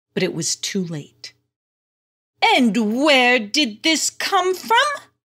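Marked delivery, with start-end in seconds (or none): 2.4-4.8 high, loud, scornful mocking sneer. Finding a hidden chalkboard picture meant to be her, sneering. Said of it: "sneered Miss Wigglebutt".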